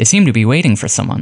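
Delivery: ordinary delivery, nothing marked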